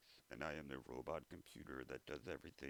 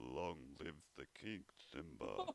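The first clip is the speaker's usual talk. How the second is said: put-on noble old lion voice. Trying out famous voices one after another: Mufasa voice. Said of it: "Or kind of like Mufasa".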